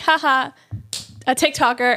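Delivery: ordinary talk, nothing marked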